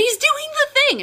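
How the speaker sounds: put-on, very high-pitched, excited shriek. Retelling a reaction to an anime scene: imitating her own scream. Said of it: "and I screamed, like, audibly out loud".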